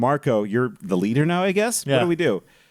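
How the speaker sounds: plain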